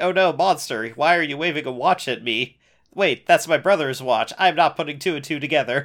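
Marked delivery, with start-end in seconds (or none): none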